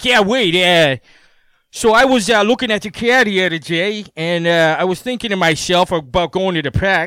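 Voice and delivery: put-on vicious, over-the-top, heavily laid-on Boston accent. Talking to wade in the same accent he has: exaggerated boston accent. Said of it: "I'll put on like the most vicious Boston accent".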